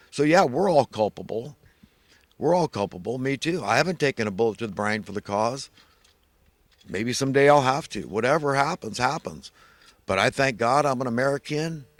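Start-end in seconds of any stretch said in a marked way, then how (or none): 10.0-11.8 put-on American Southern accent, male voice. Joking about thanking god to be american: put-on southern accent. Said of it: "like some guy from the South".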